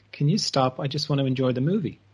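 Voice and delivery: plain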